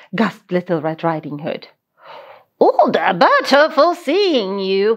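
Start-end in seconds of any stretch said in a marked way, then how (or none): 2.6-4.9 goofy, playful, silly big bad wolf voice. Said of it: "replied the wolf in a silly voice".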